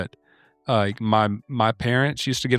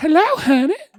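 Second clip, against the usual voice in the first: put-on old lady voice, very high; 5 dB louder than usual. Retelling answering a man's call, speak in your put-on old woman voice. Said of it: "I answered with my old woman voice".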